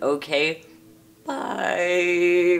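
awkward breaking voice. Ending an awkward video outro, voice cracking. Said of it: "Voice cracking".

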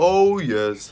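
bright, cheery voice. Gehazi answers Naaman's question while making up a lie; cheerful. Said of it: "said Gehazi cheerfully".

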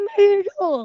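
very high, loud, eager and thrilled voice. A boy, asked by his parent to sound more excited, says his age: more excited. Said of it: "Can you sound more excited".

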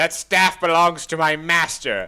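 menacing dark wizard voice, loud and high. Narrating the game to the players, the host voices a dark wizard; dark wizard voice. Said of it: "The voice acting in this is amazing".

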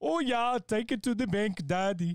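put-on Indian-sounding English accent. Saying the line a friend asked for in a put-on voice, Indian-sounding accent. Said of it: "Why does it sound more Indian?".

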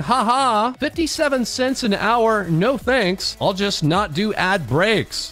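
usual speaking voice

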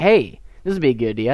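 ordinary talk, nothing marked

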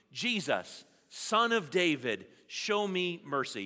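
loud, slow call-out, several voices together. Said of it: "Say it nice and loud with me".

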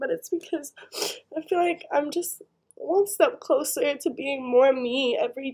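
talking through tears, tearful, crying speech. A speaker explains why they are crying, crying. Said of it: "I know I'm crying".

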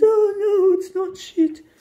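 put-on offended, indignant tone. Retelling a woman's reply after the speaker turned her down, mock-offended. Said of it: "she got all offended".

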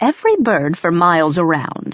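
ordinary delivery

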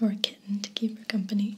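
plain

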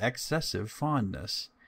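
ordinary delivery

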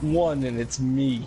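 mocking, low, slow, flat drawl.

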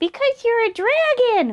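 tiny, squeaking, very high exclaiming voice. A mouse tells a dragon squishing it why it can't stay; exclaiming. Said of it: "Mouse exclaimed".

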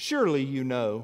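pointed, acted-out sarcastic retort. Reading aloud God's question about the earth: sarcastic quoted line. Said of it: "That's sarcastic".

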